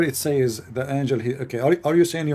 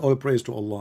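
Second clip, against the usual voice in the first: usual speaking voice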